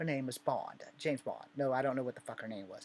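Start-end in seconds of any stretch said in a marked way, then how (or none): 0.0-1.5 put-on English accent in film-spy style. Retelling how an English lady at a job application talked: James Bond English accent. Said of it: "She talks like James Bond".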